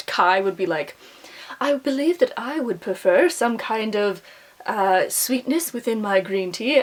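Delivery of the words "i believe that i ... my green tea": put-on slow, princely English accent. Voicing a book character who asks for sweetness in his tea: English accent as Kai. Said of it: "I have an English accent all of a sudden for Kai".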